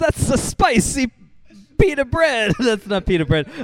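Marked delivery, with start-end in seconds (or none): 0.0-2.5 put-on Italian New York accent, high, slow, drawn out. Joking about running a pie shop, doing a fake Italian New York accent. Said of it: "pretending to have a New York accent, pretending to have an Italian accent".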